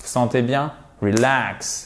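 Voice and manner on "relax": relax with stress on second syllable -lax. Showing English word stress in relax: stress on second syllable -lax. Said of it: "L'accentuation sur la deux, seconde syllabe".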